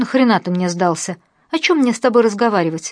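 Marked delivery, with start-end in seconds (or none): none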